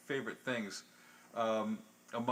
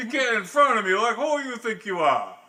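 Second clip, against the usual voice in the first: put-on tough Brooklyn accent, higher and louder; 11 semitones higher, 12 dB louder than usual. Acting out a line-cutter confrontation in brooklyn: put-on brooklyn tough voice. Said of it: "now you're in Brooklyn".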